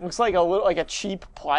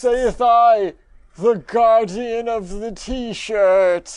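sinister wizard voice, higher pitch, louder; 4 semitones higher, 7 dB louder than usual. Playing the Guardian of the T-shirt announcing tests, in a full-on Voldemort voice. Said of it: "I'm just going to do a full-on Voldemort voice now".

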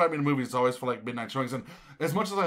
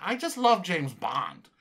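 slow, put-on elderly lady voice; 2 semitones higher than usual. Retelling what the old ladies at morning movies say: imitating an old lady. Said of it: "it's all old ladies who are all like".

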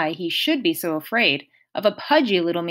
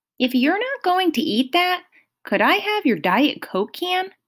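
timid, shy, very high-pitched voice; 10 semitones higher than usual. Narrator reads Grover asking Mr. D a question; timid. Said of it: "Grover asked timidly".

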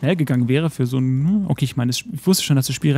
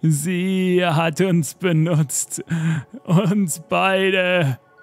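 very slow dying voice, Sie drawn out; 4 semitones higher than usual. A dying man speaks his last words, in a dying voice. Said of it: "tut der Emerald City [name] seinen letzten Atemzug".

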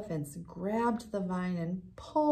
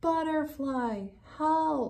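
high, calling-out voice; 7 semitones higher than usual. Elmer, high up and with no answer from the others, calls to butterfly for help. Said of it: "he called".

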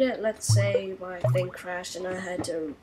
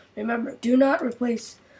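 cracking voice, higher, louder; 4 semitones higher, 4 dB louder than usual. Speaker demonstrating how to install a TF2 HUD: voice cracking. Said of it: "my voice is cracking".

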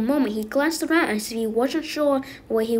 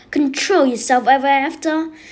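loud, full-throated bellow; 3 semitones higher, 7 dB louder than usual. Narrator reading a line called out by an unseen voice, bellowed. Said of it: "bellowed a voice".

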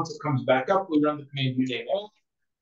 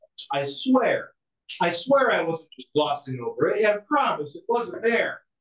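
heavy, laid-on-thick, strongly sarcastic protesting tone; 3 semitones higher than usual. Explaining reboot syntax for a kernel buried in a submenu: strong sarcasm. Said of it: "said with strong sarcasm".

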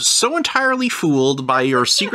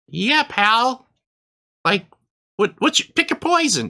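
squeaky voice, much higher pitch; 6 semitones higher than usual. Role-playing a bartender answering a customer, squeaky bartender voice. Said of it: "Squeaky voices all around".

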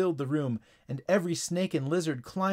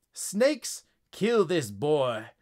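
commanding, authoritative delivery. Reading a story aloud, voicing the frog's order to the snakes, commanding. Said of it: "commanded the frog".

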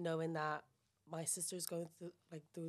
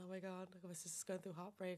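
soft, weepy, tearful words through crying; 6 dB quieter than usual. Speaker recounts crying to someone after an audition, retelling tearful words. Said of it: "I'm crying".

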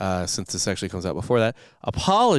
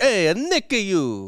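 mock Italian accent, higher; 10 semitones higher than usual. Joking that a hospital word sounds Italian: put-on Italian accent. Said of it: "sounds like something in Italian would say".

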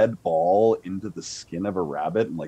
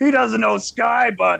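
put-on very high-pitched, rough, tipsy drunk dwarf voice; 6 dB louder than usual. Voicing a drunk dwarf who invites the party to a game: drunk dwarf voice. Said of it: "a pretty drunk dwarf kind of stumbles over".

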